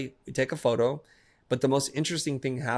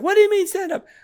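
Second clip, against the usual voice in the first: panicked yell, very high and very loud; 9 dB louder than usual. Retelling a son caught in seaweed asking a question: imitating panicked voice.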